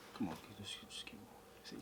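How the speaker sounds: soft, urgent, unvoiced whisper.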